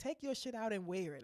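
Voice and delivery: ordinary talk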